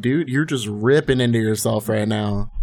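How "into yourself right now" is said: normal talking voice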